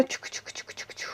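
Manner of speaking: soft, whispered tchouk sound effect.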